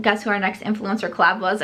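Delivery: normal talking voice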